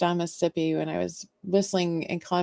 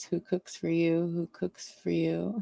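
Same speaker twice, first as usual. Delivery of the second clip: sad, weak, so-so barred owl hoot; 4 dB quieter than usual. Speaker imitates what a barred owl says: barred owl call impression. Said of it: "that was a pretty sad impression".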